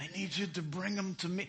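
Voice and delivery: soft, put-on Italian accent. Speaker retelling a Bible scene, the high priest ordering soldiers: put-on Italian accent. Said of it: "I got the Italian voice".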